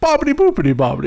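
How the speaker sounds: fake, bad Italian-sounding gibberish babble. Retelling a cartoon scene where Peter fakes Italian at a deli: Peter Griffin fake Italian. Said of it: "Peter grows the mustache and he goes to that fucking Italian deli and he's like".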